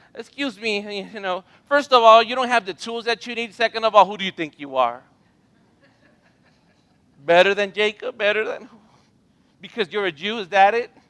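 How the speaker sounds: mock booming, very loud, sassy, full of attitude. Retelling the woman's reply to Jesus at the well: imitating her attitude. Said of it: "She gave a little attitude".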